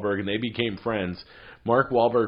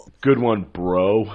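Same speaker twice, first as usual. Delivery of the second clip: loud, mocking, sarcastic "bro"; 6 dB louder than usual. Trading mock lines about a tweet: sarcastic "bro". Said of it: "calling someone bro sarcastically".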